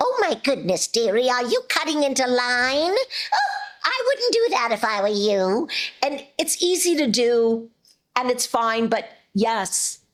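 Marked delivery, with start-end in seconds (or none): 0.0-5.7 put-on swooping, sing-song old lady voice. Showing how she teases a passerby cutting in line, Granny voice. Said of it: "I'll whip into Granny and say".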